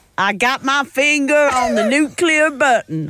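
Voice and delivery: put-on Texas-style Southern accent. Joking about a teen nuclear dictator, speaker tries the line in a texan accent. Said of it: "in a Texan accent".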